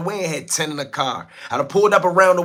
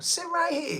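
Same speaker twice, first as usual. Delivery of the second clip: mock creepy coaxing voice, higher and quieter; 12 semitones higher, 10 dB quieter than usual. Retelling how an interviewer coaxed a guest: imitating a creepy coaxing voice. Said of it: "He sound like a chomo".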